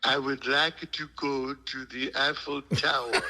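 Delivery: clumsy put-on French accent with a touch of Brooklyn. Retelling a scene where the ugly American talks to a driver: imitating Susan's French accent. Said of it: "Susan speaking with a French accent".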